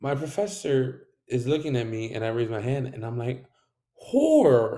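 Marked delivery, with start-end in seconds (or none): 3.9-4.8 muffled, high horror. Retelling an answer to a professor through a mask: imitating muffled speech through a mask.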